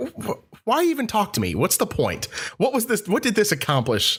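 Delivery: high, swooping, baffled, incredulous can't-believe-it voice. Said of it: "an incredulous look, like".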